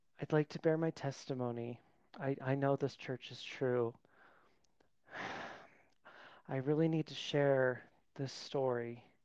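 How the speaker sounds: airy, breathy delivery. Imitating an adult bearing testimony at church: breathy testimony voice. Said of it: "It's always breathy".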